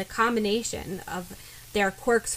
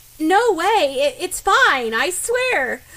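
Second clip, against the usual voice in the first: shrill, alarmingly high, far too loud, drawn out; 7 semitones higher, 8 dB louder than usual. Asked whether a boy did anything weird, she denies it: alarmingly high-pitched voice. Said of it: "Ochako's voice reaches an alarming pitch".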